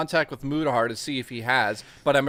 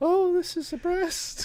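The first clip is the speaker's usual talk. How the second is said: put-on very high, slow, drawn-out girly voice. Suggesting how a male character could say it: girly voice. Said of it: "say in a girly voice".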